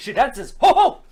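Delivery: belting it out high and loud. Answering a request for a Robin Williams impression: bad Robin Williams impression. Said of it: "two bad Robin Williams impressions".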